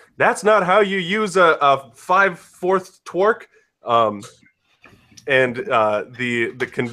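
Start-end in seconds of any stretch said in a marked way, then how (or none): 0.2-3.4 very high-pitched, shrill, squealing shout. Voicing a character yelling at mimics: Kite yelling. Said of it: "you hear Kite yell".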